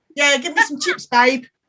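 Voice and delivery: put-on Essex accent. Showing how people on The Only Way Is Essex talk: put-on Essex accent. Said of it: "I can't even do the accent".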